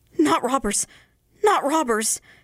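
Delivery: high, breathless, terrified, frightened gasping. A frightened man answers the peddler's question, gasping, terrified. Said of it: "Gasped the terrified man".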